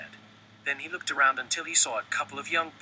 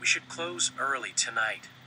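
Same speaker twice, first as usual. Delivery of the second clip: ordinary delivery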